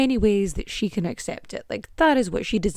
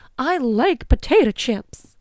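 very slow cartoon character voice, every word stretched; 4 semitones higher, 4 dB louder than usual. Talking about eating chips while snacking: sounding like Goofy. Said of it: "Why did I sound like Goofy".

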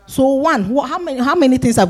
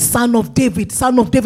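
ordinary talk

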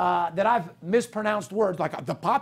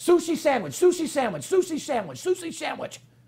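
rattled off as fast as possible, pitched up; 8 semitones higher than usual. Challenging listeners with a tongue twister, the speaker repeats it very fast. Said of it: "say these two words 10 times as fast as you can".

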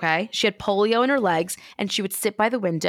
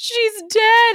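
put-on very high, loud sobbing, bawling wail; 6 dB louder than usual. Retelling a dress shop visit after a death: imitating someone bawling. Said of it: "my mom and my sister start bawling".

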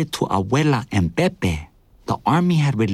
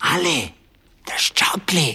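loud stage whisper; 4 semitones higher than usual. Narrator reads a man coming back with two mugs, calling out, loud whisper. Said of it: "he said in a loud whisper".

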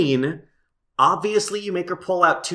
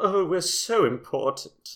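slow, posh British drawl like royalty; 4 dB quieter than usual. Mocking posh British royalty from a show: posh British Maggie Smith voice. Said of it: "posh British, like, Maggie Smith".

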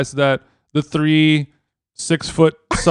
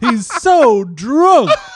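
put-on yelling voice, not angry, higher pitch; 8 semitones higher, 4 dB louder than usual. Retelling what a passing driver yelled out: Rodney Dangerfield voice. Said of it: "a Rodney Dangerfield kind of way".

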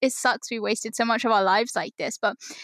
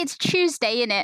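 slower, put-on British accent. Recalling a line from TikTok, the speaker is imitating a British accent. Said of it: "There's one that they always say".

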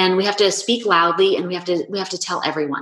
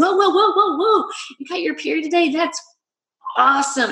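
very high, mock effusive burst of gushing excitement; 10 semitones higher than usual. Retelling own reaction to a daughter's news: retelling own effusive excited reaction. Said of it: "and I was really effusive".

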